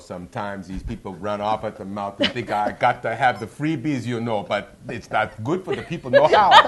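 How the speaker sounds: put-on Jamaican accent, very loud. Asked by the host for an impression, speaker answers in a Jamaican accent impression. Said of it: "A little bit Jamaican?".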